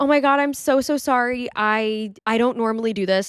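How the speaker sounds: tearful voice, crying through the words. Retelling apologizing at a doorstep: imitating own crying apology. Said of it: "I start crying".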